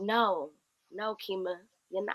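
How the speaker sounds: put-on quiet calm voice. Retelling an inner voice heard while grieving: imitating a still voice. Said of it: "hearing this still voice".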